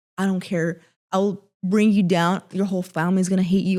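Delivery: angry outburst. Retelling a phone call threatening the man: imitating own angry threat. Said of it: "I remember I was so angry".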